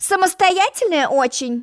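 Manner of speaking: snide, mocking tone. Zheltok-Beltok answers Alice, who refuses anyone's advice, snidely. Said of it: "ехидно осведомился Желток-Белток".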